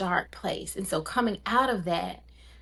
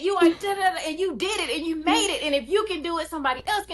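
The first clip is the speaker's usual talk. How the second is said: put-on scream, higher; 10 semitones higher than usual. Retelling screaming at herself in the mirror: retelling screaming at herself. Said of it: "I'm screaming to myself in the mirror".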